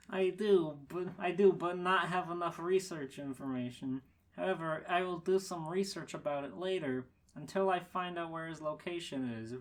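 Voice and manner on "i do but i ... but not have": plain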